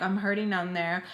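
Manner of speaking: ordinary talk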